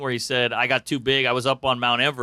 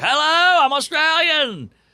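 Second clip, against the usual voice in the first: wild crazy voice, pitched very high; 13 semitones higher, 4 dB louder than usual. Describing a comic's voice to another speaker: imitating James Donald McCann's crazy voice. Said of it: "Crazy voice".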